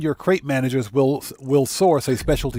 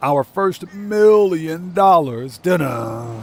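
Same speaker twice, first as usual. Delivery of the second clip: slow, drawn-out campy movie villain voice; 3 semitones higher, 3 dB louder than usual. Speaker doing a line in their Dr. Evil voice. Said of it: "in my Doctor Evil voice".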